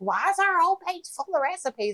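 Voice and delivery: put-on very high-pitched granny voice. Retelling what Jenny asked about their page, imitating Jenny as an old grandma. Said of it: "You make her sound like an old grandma".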